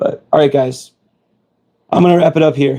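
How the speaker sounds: hoarse worn-out voice. Wrapping up a long stream and saying goodbye: losing voice. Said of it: "You can hear I'm losing my voice".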